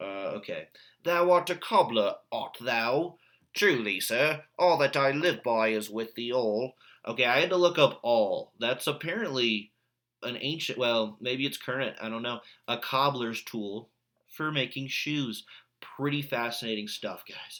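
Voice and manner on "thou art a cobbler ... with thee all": put-on Cockney accent. Reading aloud a scene of a gentleman talking with a cobbler, Cockney accent. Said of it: "let me get into my uh, Cockney".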